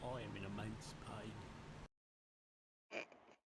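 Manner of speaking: soft orc warrior character voice. A player speaks up in character after the group discusses the route; Warhammer orc voice. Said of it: "That sounds like an orc from Warhammer".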